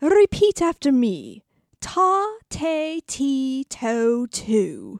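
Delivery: rounded syllables, round tones, elocution-style careful enunciation. Playing the dictation coach opening a lesson, in Phoebe Dinsmore's round-toned voice. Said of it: "who talks like this, with round syllables and tones".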